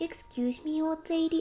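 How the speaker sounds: put-on sweet, high, slow, sugary, polite child voice. Imitating a random kid who calls an adult old: imitating a kid saying it sweetly. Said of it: "they do it with such a sweet face".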